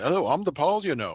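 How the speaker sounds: put-on everyday plain speech in an English accent. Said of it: "he's in his English accent".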